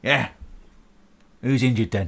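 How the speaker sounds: put-on bent-over elderly man voice. Voicing a hunched old man answering the door: hunched old man voice. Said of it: "Before you stands a hunched over old man".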